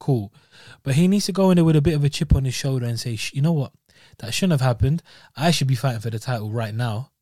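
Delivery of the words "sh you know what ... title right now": ordinary talk, nothing marked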